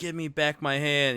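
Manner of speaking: acted-out, raw, loud screaming yell. Retelling a horror movie scene where the hand is taken: imitating Ash screaming. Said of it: "he's screaming".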